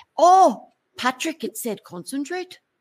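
put-on Irish-accented delivery. Telling a joke, the orange juice answers Patrick, in an Irish accent. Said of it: "That's a great Irish accent".

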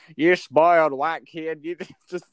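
loud, fake rural country accent. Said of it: "I'm using a country accent".

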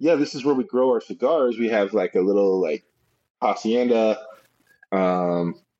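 ordinary talk, nothing marked

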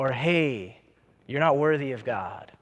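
slow, half-whispered, very low and deep. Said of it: "He whispers".

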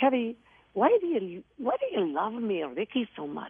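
put-on Irish brogue. Retelling a conversation on set, the speaker quotes him in an attempted Irish brogue. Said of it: "I'll try to do his brogue".

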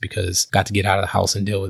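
plain

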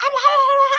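very high, excited squeals.

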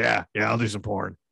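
raspy, smoker's voice. Voicing a made-up porn star who smokes constantly: smoker's voice. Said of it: "that's what she sounded like".

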